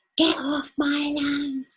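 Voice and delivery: very high, very slow, shrill acted shriek. Retelling how a lady came out at the visitors: imitating someone screaming. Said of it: "she's screaming".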